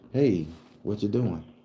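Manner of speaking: peaceful, lovely, tranquil, serene voice. Retelling the voice he heard in his head at the doorknob: calm, serene voice. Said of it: "very beautiful voice, calm voice, serene as fuck".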